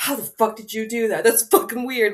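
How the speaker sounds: play-acted stunned disbelief, almost angry. Describing someone's reaction to a magic trick, mock almost-mad disbelief. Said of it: "Like they're almost like mad".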